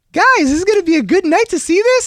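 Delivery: put-on very high, bubbly, chirpy girlfriend voice. Retelling a canoe outing, the speaker quotes a man's girlfriend: imitating a bubbly woman. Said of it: "his girlfriend was like a little bubbly".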